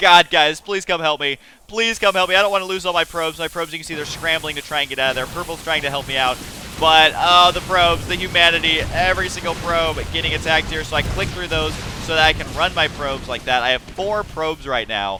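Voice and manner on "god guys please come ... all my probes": frantic, panicked screamed cry. Retelling a game moment, pleading with teammates over Skype: retelling a panicked scream. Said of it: "I'm screaming".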